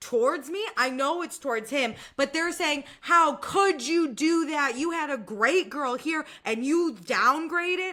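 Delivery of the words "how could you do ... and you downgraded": mild accusing yell, played lightly. Retelling everyone yelling at a man who just walked in: imitating people yelling. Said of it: "Y'all start just yelling at".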